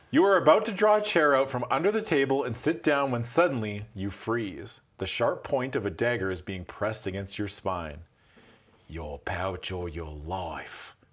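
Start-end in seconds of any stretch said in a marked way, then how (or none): 8.8-10.9 slow, loose, vaguely Australian put-on accent. Voicing a mercenary who holds a dagger to someone's spine: vaguely Australian accent. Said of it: "I just make them vaguely Australian".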